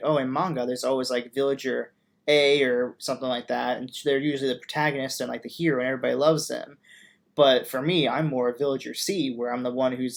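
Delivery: normal talking voice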